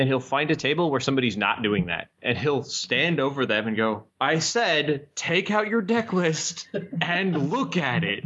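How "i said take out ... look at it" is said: very slow, emphatic, repeated, pitched-up delivery. Retelling how an event organizer stood over players, in a booming Eric Levine voice. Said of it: "this big booming Eric Levine voice".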